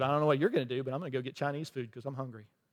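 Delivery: mock sarcastic tone. Retelling a reply to a worried church member: retelling a sarcastic reply. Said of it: "so I taught with sarcasm".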